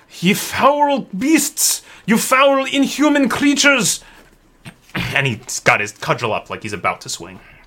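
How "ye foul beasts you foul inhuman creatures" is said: put-on very high-pitched, slow Scottish accent. Narrating a game scene, Corbrus stalks toward the undead circling Indigo, Scottish accent. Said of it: "Corbrus becomes Scottish this episode".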